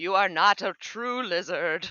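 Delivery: in-character yell. Voicing Geico attacking another character's tail: Geico yelling. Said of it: "Geico yells".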